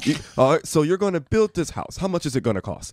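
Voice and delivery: put-on British accent. Imitating a guy on a house-building show, in a British accent. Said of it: "This is my British accent".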